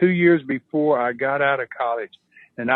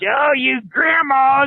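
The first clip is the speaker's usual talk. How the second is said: put-on wrestler scream, higher and louder; 11 semitones higher, 5 dB louder than usual. Retelling a wrestler taunting the grandmothers, imitating him screaming. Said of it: "he screams".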